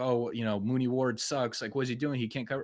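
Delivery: ordinary delivery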